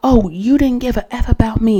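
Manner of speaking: restrained, furious, angry tone, like screaming. Retelling what a pissed-off woman screamed at him, retelling her angry screaming. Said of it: "screaming like".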